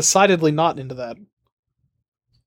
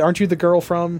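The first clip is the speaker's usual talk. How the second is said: usual speaking voice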